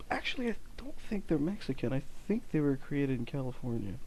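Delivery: sheepish, very soft, hushed, quiet tone. Chatting with another speaker who remarks on his levels, he is talking very low. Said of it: "you're talking very low".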